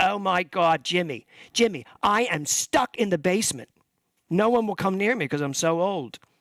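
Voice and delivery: mock Philadelphia accent. Speaker retelling what his aunt told him, in Aunt Carolyn's Philly accent. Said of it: "in her best Philly accent".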